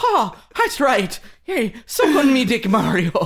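very high, squeaky, badly done put-on Irish accent. Riffing about a video game character who jumps onto the screen: bad Irish Mickey Mouse voice. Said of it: "you'd sound kind of like more like a bad Irish Mickey Mouse".

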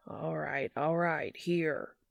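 gruff, groggy, sleep-roughened growling drawl. Reading a character's line as he feeds a yowling cat: growling sleep-roughened drawl. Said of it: "Dean growls in his sleep-roughened drawl".

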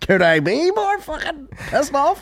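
heavily sarcastic, very high, swooping and swinging tone. Joking about being sarcastic, the speaker says a line as Chandler: Chandler impression. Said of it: "I'm Chandler in the house".

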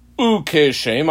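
Ukeshem stressed. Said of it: "I dot underline the word Ukeshem".

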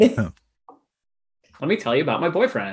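put-on casual narrator voice. Imitating Cecil from Night Vale for the group: Cecil from Night Vale impression. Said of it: "so deep and rich, and, and then he's just like".

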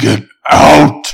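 loud, creaky, rasping, rough demonic voice. Acting out a scary scene, voicing a head on the wall: demonic voice. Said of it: "Demonic voice".

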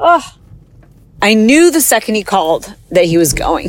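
tearful, on the verge of crying. Recalling a phone call from an uncle, tearful and about to cry. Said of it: "I'm gonna cry".

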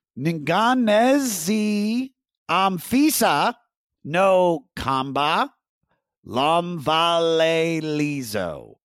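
slow, careful, deliberate enunciation. Challenged to take a stab at a difficult phrase: slow, careful pronunciation. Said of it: "when you go that slow".

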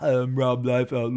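put-on dumb-sounding Southern California suburban Valley Girl voice. Imitating how someone might mock the speaker: mocking Valley Girl voice. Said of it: "stupid Valley Girl impersonation of me".

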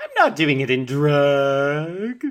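flamboyant, very loud and high, stretched and dragged. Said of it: "he uses the single most flamboyant voice he could possibly use".

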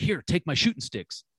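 frantic, panicky, urgent voice. Speaker retells what a man told him while scrambling, imitating a panicked voice. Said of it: "in this panicked voice".

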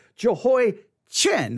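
Jehoiachin said with stress on the final syllable chin. Distinguishing a name from similar-sounding names: stress on chin in Jehoiachin. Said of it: "I'm going to stress the chin".

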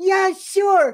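put-on tiny, very high, squeaky child voice. Retelling a costumed person's answer to a photo request: squeaky little child voice. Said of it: "this squeaky little like child voice go".

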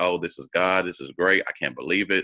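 put-on crying voice. Retelling a mother's reaction to news of a brother: imitating mom crying. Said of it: "So my mom is just crying".

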